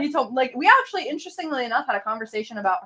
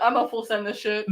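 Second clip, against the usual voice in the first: ordinary talk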